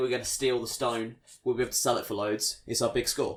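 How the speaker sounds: plain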